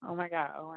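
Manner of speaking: nervous, flustered, caught-off-guard blurt. Just put through live on a call-in line: nervous. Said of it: "I'm kinda nervous".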